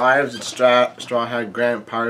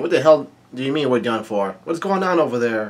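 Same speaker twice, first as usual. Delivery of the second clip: ordinary delivery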